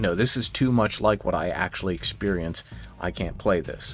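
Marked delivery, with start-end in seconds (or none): none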